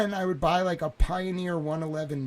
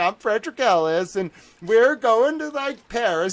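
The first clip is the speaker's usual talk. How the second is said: put-on goofy voice, higher and louder; 6 semitones higher, 8 dB louder than usual. Retelling airport check-in, imitating dad acting goofy. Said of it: "He'd be all goofy and kind of my dad".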